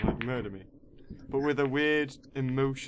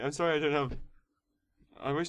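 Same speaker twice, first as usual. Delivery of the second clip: rushed delivery, choking mid-sentence; 2 semitones higher than usual. Speaker trying to carry on mid-speech, choking on saliva. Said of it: "I am choking on saliva".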